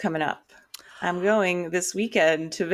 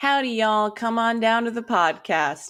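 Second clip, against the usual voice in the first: mock Western cowgirl accent; 4 semitones higher than usual. Opening the podcast as cowgirl hosts, greeting listeners in a put-on cowgirl accent. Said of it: "I guess we're cowgirls now".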